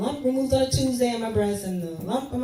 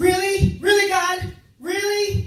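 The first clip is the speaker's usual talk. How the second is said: very high, slow, drawn-out raised shout; 10 semitones higher, 6 dB louder than usual. Retelling reacting to a television show in the kitchen: retelling a shout. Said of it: "I really started shouting like that".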